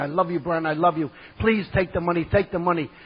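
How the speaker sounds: ordinary talk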